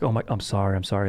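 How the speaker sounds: ordinary talk, nothing marked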